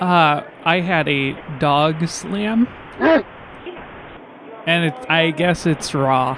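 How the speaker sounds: speech slowed right down, words drawn out.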